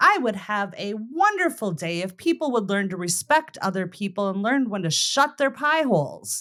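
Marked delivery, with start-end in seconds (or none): none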